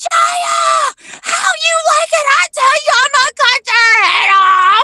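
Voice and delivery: mock very high yell with one word drawn out. Telling what he yells through the store, retelling a yell.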